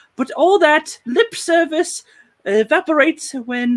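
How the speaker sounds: announcer voice. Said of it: "Let's do the announcer voice".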